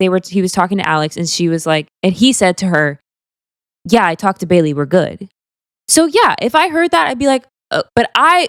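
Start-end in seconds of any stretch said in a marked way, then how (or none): none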